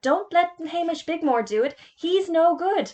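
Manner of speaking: many voices yelling at once, high-pitched. Everyone else shouts to the head teacher about a classmate, shouting. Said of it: "everyone else began to shout".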